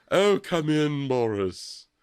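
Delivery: put-on posh British accent. Retelling a scene, quoting her greeting boris, in a fake british accent. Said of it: "I love her like fake accent".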